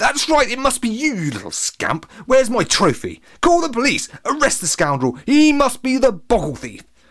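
shrill, very high, accusing exclamation. Narrator reads a man's line before a crowd, exclaiming. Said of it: "Exclaimed Latham".

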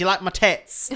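mock chavvy English woman voice, put-on chav accent. Describing how a show opens with a woman's line, chavvy English woman voice. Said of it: "very English like fucking chavvy woman being like".

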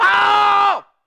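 very high, loud screaming and yelling.

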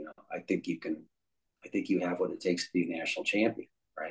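really soft, quiet, encouraging voice.

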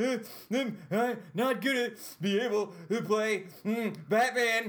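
very high, very slow, drawn-out sobbing wail. Retelling own words after smashing a finger in a safe: imitating own past crying. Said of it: "And I'm crying".

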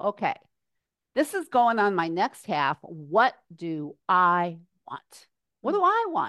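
plain

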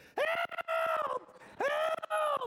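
play-acted very high, drawn-out little-kid scream. Retelling a burst pipe soaking them, retelling screaming like a kid. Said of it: "I probably sounded like a little kid".

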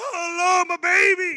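shrill, very high, very loud, drawn-out wail. Acting out a hired mourner at a funeral: imitating a professional mourner wailing. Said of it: "jump on the casket and be like".

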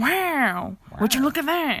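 unhurried slow drawl with long stretched wow. Doing an old-time version of Owen Wilson: Owen Wilson impression. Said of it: "that's Owen Wilson in the nineteen forty".

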